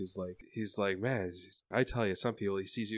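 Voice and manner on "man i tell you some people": muttering under breath, quieter. Voicing a man at a desk, shaking his head: mumbling to himself. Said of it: "mumbling to himself".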